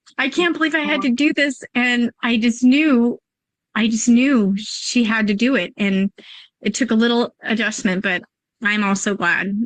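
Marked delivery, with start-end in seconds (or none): 0.2-1.6 mock crying, sobbing and tearful through the words. Retelling driving away after a school drop-off: imitating own past sobbing. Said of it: "I was sobbing".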